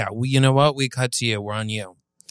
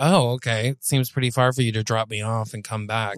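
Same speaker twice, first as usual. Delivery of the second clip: plain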